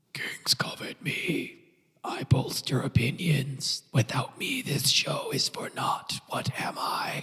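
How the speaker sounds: eerie, ghastly whisper of an undead lich. Narrating a tabletop game, voicing a lich at the table in a ghastly voice. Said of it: "you hear a ghastly voice that says".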